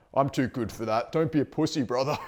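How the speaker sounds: mocking, put-on tough-guy, macho voice. Quoting an aggressive macho man type: imitating a macho man. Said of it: "the macho man".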